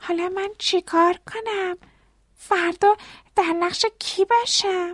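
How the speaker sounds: anxious, fretful tone. Tally asks his father after the power goes out, worried. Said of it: "تلی با نگرانی گفت".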